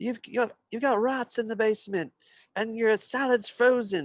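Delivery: angry, furious scolding rant, pitched very high. Retelling a Gordon Ramsay show visiting little restaurants: angry Gordon Ramsay imitation. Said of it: "he's so angry and he's just scaring them".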